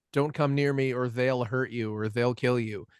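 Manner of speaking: ordinary talk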